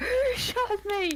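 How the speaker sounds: put-on screaming sound. Retelling what a returned monster yelled after being rocket launched: imitating someone screaming.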